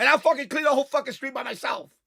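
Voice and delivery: heated angry rant. Complaining about cleaning the whole street alone: heated angry rant. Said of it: "let me take it down a notch".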